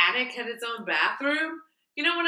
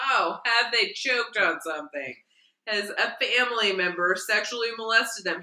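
usual speaking voice

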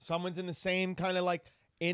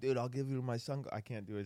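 put-on Irish accent, quieter; 7 semitones lower, 6 dB quieter than usual. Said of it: "Keep doing that Irish accent".

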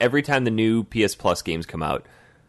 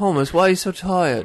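very high, posh, put-on British accent; 9 semitones higher than usual. Acting out the girlfriend's parents asking why he is tired: British accent. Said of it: "impressed with your accent right now".

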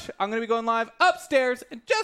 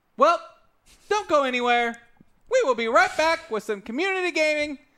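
mild, toned-down yell; 3 semitones higher than usual. Host announces a break, unable to hear own voice, yelling. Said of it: "I'm yelling because I can't hear my own voice".

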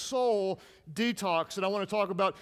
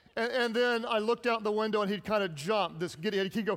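ordinary delivery

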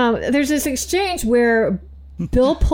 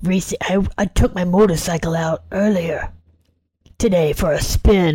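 put-on gravelly voice, lower in pitch; 5 semitones lower than usual. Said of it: "like, a gravelly voice".

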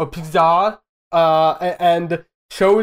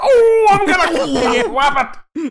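very high, slow, drawn-out, furious cartoon-cowboy voice; 13 semitones higher, 3 dB louder than usual. Comparing an actor's anger to a cartoon cowboy: Yosemite Sam angry voice. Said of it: "Yosemite Sam. Like".

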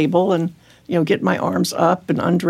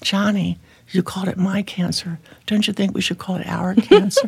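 mock soft intimate whisper. Telling how Ken pulled him aside, retelling Ken's whisper. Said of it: "he pulls me aside and whispers to me".

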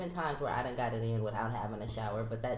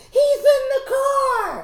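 very high, very loud, shrill, drawn-out scream; 17 dB louder than usual. Retelling spotting someone in a car, the speaker acts out retelling a scream. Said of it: "And then I screamed".

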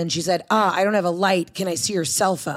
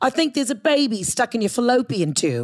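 kindly, sweetly spoken put-on British accent; 3 semitones higher than usual. Retelling what the woman examining her said, in a sweet British accent. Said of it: "in a sweet British accent".

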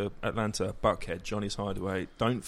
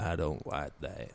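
deliberate, slow, drawn-out, low menacing tone; 5 semitones lower, 4 dB quieter than usual. Retelling how a man stepped close and answered: imitating slow menacing speech. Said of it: "he said really slowly".

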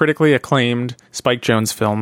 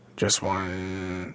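buzzing voice, lower and quieter; 6 semitones lower, 12 dB quieter than usual. Showing another speaker a strange sound in the voice: buzzing voice. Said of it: "My voice is doing this weird, like, buzzing thing".

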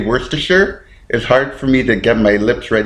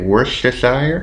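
Worcestershire said uncertainly, as a guess. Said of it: "Okay, how do you say it?".

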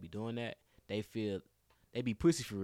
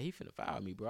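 usual speaking voice

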